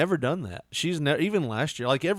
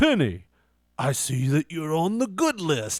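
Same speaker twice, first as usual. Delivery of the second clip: fake app-style voice; 3 semitones higher, 3 dB louder than usual. Retelling how a phone app had Santa call: Santa Claus voice. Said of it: "have Santa call".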